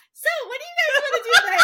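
mock sunny, very high, quick, chirpy singsong. Retelling how you greeted the two kids after getting your smoothie, quoting own words. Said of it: "and then I get my smoothie and I'm like".

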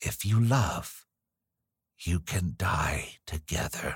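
very slow delivery. An old nurse, a hundred years old, answers very slowly. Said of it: "she said very slowly".

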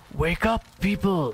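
loud, high-pitched stage whisper. Narrator voicing a creature tapping on your door: loud whisper. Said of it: "whispers loudly".

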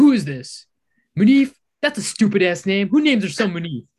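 very loud, shrill, rude, insulting yelling. Retelling a sales role play, answering the phone as the seller: imitating Elijah playing a rude seller. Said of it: "pretending to be a seller".

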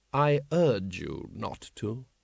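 gentle, mild, very slow delivery. A lord replies to an armed man who threatens him, mild. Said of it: "said Lord Vetinari mildly".

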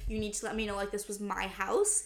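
ordinary talk, nothing marked

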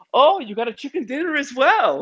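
put-on excited Scandinavian accent. Act out her answer to the man who won, in Toast Giesen's little accent, acting excited. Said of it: "she has a little accent".

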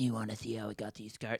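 low pitch, very hushed, dropped right down. Quoting a famous movie line as a bit: Joker impression. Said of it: "That's the best Joker impression you're ever going to hear".

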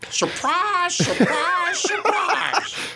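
very high gee-whiz character impression voice. Answering another speaker's impression with a rival take: Gomer Pyle impression. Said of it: "Who did the better Gomer".

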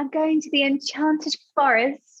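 fake upper-class English accent. Teasing the other speaker's pronunciation of a word, the speaker mimics it: Keira Knightley-style posh voice. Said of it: "you're making it sound like I'm a fucking Keira Knightley person".

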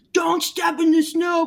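loud scolding yell. Recounting how a man yelled at someone who stepped in his snow, retelling a man yelling. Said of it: "this guy starts yelling at this person".

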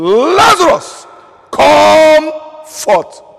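rough, very loud, high-pitched, forceful cry. Retelling the Bible story to the brethren, deliver the quoted call as a loud cry. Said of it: "he cried with a loud voice".

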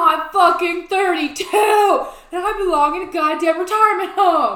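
loud, dragged-out screaming rant. Retelling how the other speaker shouted at a stranger: imitating a friend's scream. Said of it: "screaming, screaming".

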